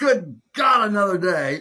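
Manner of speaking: loud, high, grimacing groan.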